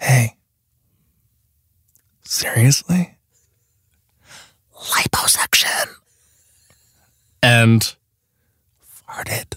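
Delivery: soft, slow, breathy whisper. Presenting nominees for Best Word to Whisper: whispering. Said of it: "Best Word to Whisper".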